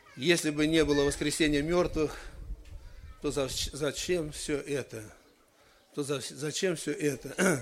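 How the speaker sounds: usual speaking voice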